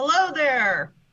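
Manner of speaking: calling out loudly. Playing a character calling through a hole in stone: yelling through a hole. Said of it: "I'll kind of yell through and go".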